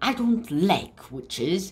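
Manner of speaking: plain reading voice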